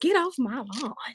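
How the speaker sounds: put-on southern American accent. Showing how the line must be said, a speaker uses a southern accent. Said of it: "he's got to use a southern accent when he says it".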